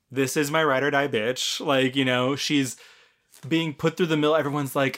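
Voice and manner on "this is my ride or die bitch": usual speaking voice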